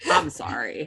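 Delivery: sarcastic tone, clearly insincere. Dismissing people who don't understand the margins: sarcastic, insincere apology. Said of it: "I say that I'm sorry in that tone".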